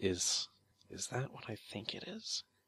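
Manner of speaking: soft muttering, almost under the breath. Voicing a character studying a strange root: voice almost under her breath. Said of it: "almost under her breath you hear her say".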